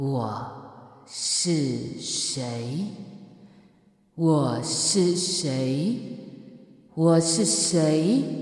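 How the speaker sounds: slow, calm, clear voice.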